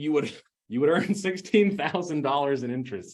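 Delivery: words breaking up with laughter. Speaker walking a listener through the numbers, laughing while talking. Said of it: "Sorry, I'm laughing".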